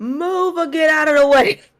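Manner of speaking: shrill, very high, loud yell. Voicing a random passerby in a crowd: yelling random passerby. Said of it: "Another random dude just yells".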